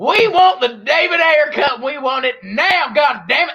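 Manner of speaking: mock loud, high Southern accent. Mocking supporters of the david ayer cut as southern rednecks: mock southern redneck accent. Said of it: "You sound like Jivin Judge Jack".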